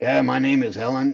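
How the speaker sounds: put-on raspy voice. Recalling an anti-smoking commercial, imitating Helen's raspy voice. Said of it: "her voice is so raspy".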